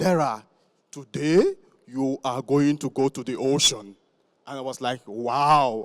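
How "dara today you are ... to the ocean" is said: put-on deep Nigerian-accented voice. Quoting his late father after his good results, in a deep nigerian voice. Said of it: "with his very deep Nigerian voice".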